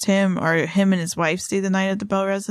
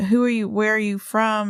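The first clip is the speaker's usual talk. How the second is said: normal talking voice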